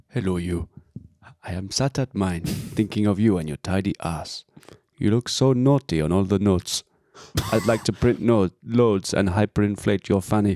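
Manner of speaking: imitated Ugandan accent. Reading out a love letter after being asked: put-on Idi Amin accent. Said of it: "can you do it in the accent?".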